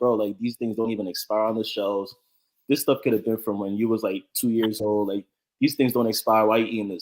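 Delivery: ordinary talk, nothing marked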